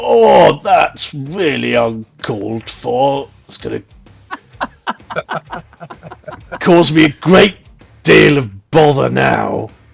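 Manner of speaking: loud, sorrowful, mournful demon voice. Game master voices the demon whose foot a player smashes: sorrowful demon voice. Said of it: "the sorrowful demon goes".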